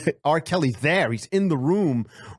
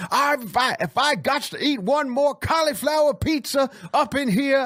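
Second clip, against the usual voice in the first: mock screaming woman, much higher; 12 semitones higher than usual. Imagining Oprah breaking down in front of Gayle: Oprah impression, screaming. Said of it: "That's my Oprah impression".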